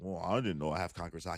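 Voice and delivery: low, fast, quiet, offhand mumble.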